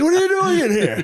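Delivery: very high-pitched, panicked shriek.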